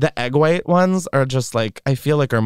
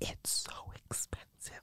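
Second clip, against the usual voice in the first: hushed, very quiet whisper. Speaker whispers to a companion because she can hear them: whispering. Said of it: "I'm whispering because she can hear us".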